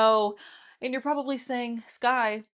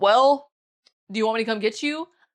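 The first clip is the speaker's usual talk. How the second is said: mock-annoyed put-on voice; 5 dB louder than usual. Retelling calling their mom after the car trouble, imitating her annoyed reply. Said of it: "my mom is instantly annoyed".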